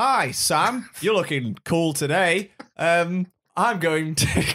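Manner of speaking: giggling through words, high and very slow. Trying to act a skit line but cannot stop laughing: laughing while talking. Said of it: "so laughing".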